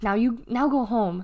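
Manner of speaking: ordinary delivery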